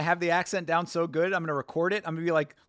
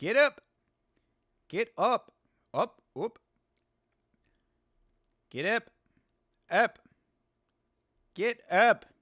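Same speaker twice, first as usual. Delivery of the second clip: Australian-accented voice; 4 semitones higher than usual. Commentating a fight and trying out a line, Australian accent. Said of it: "how would up sound?".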